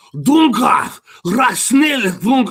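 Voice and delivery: spitty German-sounding nonsense. Speaker mocks how Austrians and Germans sound when speaking: mock German spitting gibberish. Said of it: "they sound like they're spitting out food when they speak".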